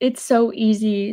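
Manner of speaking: ordinary talk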